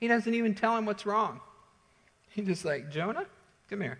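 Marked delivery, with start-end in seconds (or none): 2.9-4.0 tender, gentle, kindly calling voice. Retelling how God calls to an angry Jonah: imitating a gentle question. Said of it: "He gently asks him a question".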